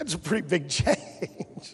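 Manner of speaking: words breaking into laughter. Hearing that the appeal process was removed from the bill, laughing. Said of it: "I'm laughing because that".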